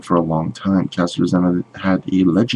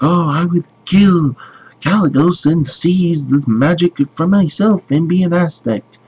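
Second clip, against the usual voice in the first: very high, squeaky put-on gnome voice; 10 semitones higher, 4 dB louder than usual. Quoting a WoW character's lines in a put-on gnome voice. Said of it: "It's my best impression of a gnome voice".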